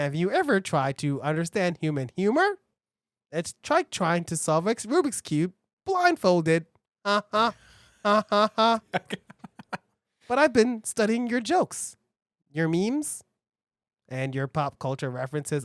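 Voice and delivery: low, deep-voiced robot voice. Trying out a comedy bit in character: robot voice. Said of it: "I'm going through many robot voices".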